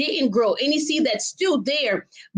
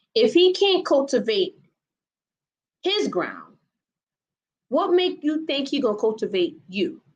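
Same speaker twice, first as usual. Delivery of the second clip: very slow, deliberate, drawn out word by word. Speaker repeating a point for the listener, said really slowly. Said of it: "let me say this really slow".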